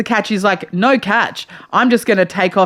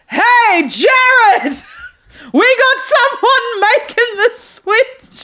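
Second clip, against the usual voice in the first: mock loud, enthusiastic booming shout. Retelling how someone called out to a shop worker: imitating an enthusiastic loud boom. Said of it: "In the most enthusiastic, loud boom".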